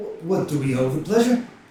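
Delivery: in shock. Voicing a character greeting the players out of shock: shocked. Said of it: "out of shock, he's like".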